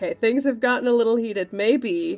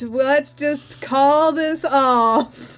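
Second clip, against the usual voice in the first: put-on cartoon sea-sponge character voice; 4 semitones higher, 4 dB louder than usual. Suggesting the party calm everyone down: SpongeBob voice. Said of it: "SpongeBob voice".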